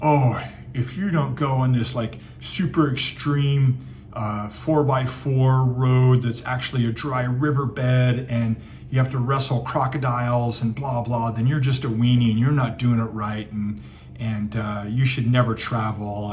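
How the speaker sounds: put-on condescending, demeaning, lecturing know-it-all voice. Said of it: "so demeaning".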